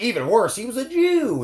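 put-on very high, shocked, disapproving, drawn out. Mimicking how another speaker read a line: mimicking a scandalized tone. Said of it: "The way you said it, you're like".

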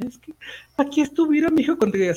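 woman's tearful, high, swooping wailing cry. Recounting what a woman with the speaker's aunt said on the street, imitating a woman wailing. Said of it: "se me quedaba viendo y chillaba".

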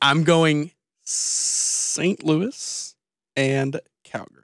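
grudging, unwilling, reluctant delivery. Naming his team picks in a group prediction round, begrudging. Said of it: "He said that so begrudgingly".

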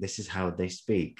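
ordinary delivery

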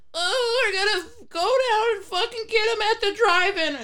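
shrill, nasal, very high little mosquito voice. Recalling an ad the speaker hated as a kid, nasally, high-pitched mosquito voice. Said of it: "this fucking nasally, high-pitched voice".

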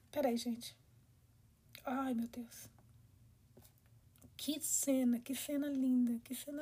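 soft, choked-up gushing, close to tears. Speaker reacting to a touching scene, saying she is moved: emotional, choked up. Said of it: "eu tô emocionada".

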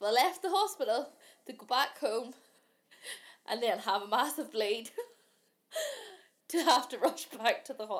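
loud, speaking through nervous laughter. Recounting a horrific medical ordeal, laughing while telling. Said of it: "I'm laughing".

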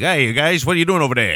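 put-on thickest Brooklyn accent, heavily laid on. Acting out an international spy in an old movie, speak in George Raft's thickest Brooklyn accent. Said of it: "speaks with the thickest fucking Brooklyn accent".

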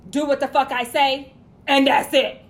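loud, angry voice. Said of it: "And it was".

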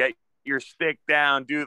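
put-on shouting coach voice. Retelling what a field hockey coach screamed, imitating her screaming. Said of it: "she's screaming".

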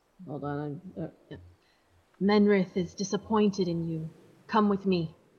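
speaking in a hushed whisper. A game master voices a character with a dagger behind someone, whispering. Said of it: "she's gonna whisper".

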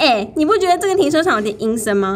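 loud, high clamoring. Retelling how your husband clamored loudly right beside you, imitating his loud clamoring. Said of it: "他就在我旁边大声嚷嚷说".

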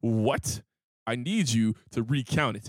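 very low, edgy, harsh voice. Quoting the listener's reply to a woman over counted money: mock-harsh negotiation voice. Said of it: "same harshest negotiation voice".

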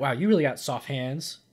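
put-on sarcastic tone. Retelling what was meant as a joke to a nurse: imitating own sarcastic remark. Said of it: "So I was gonna be sarcastic and be like".

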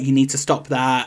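usual speaking voice

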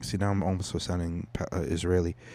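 plain

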